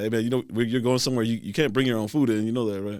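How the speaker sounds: usual speaking voice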